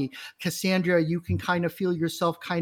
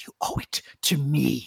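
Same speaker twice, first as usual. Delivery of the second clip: deep, dark, powerful commanding voice, lower; 3 semitones lower than usual. Voicing a being that speaks to a sorcerer: deep, dark, powerful voice. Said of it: "this deep, dark, and powerful voice".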